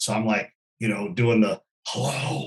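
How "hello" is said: hushed, half-whispered stage whisper. Retelling answering a phone call while hunting: imitating a half-whisper.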